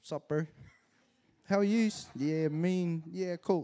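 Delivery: put-on gangster-style talk. Retelling how a once-proper man talked three years later, imitating gangster talk. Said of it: "he actually started talking real gangster".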